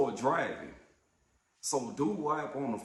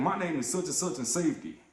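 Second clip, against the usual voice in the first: ordinary talk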